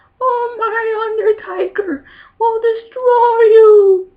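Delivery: bad shrill voice, very slow, "my" stretched. Remembering a wrestling manager's mic skills: poor Paul Bearer impression. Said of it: "I'm doing a poor-ass impression of Paul Bearer".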